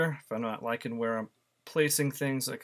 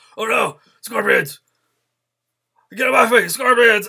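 put-on panic, much higher and louder; 11 semitones higher, 15 dB louder than usual. Speaker recalls a favorite line, imitating Wolverine freaking out. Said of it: "Wolverine freaking out".

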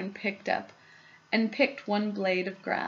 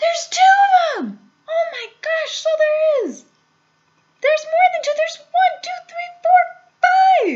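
very loud, high-pitched, thrilled excited yelling; 11 dB louder than usual. Everyone watching across the river starts shouting at once in excitement. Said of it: "everybody started shouting at once".

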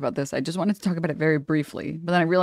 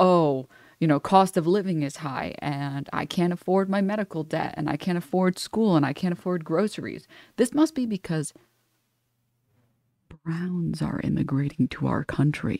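ordinary delivery

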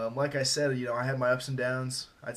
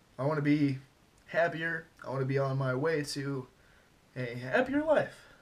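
halting, cracking voice, almost crying. Speaker opening up about depressed feelings: voice cracking, near tears. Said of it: "my voice cracked. I almost started crying there".

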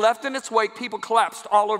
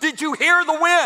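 mock high, drawn-out scream; 6 semitones higher, 4 dB louder than usual. Retelling what the soloist said in the car: imitating someone screaming. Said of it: "she screams".

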